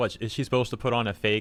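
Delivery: ordinary delivery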